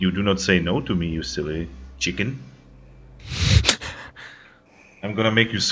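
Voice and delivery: close whisper right into an ear. Narrating the moment she whispers in your ear, whispering in your ear. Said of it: "she whispers in your ear".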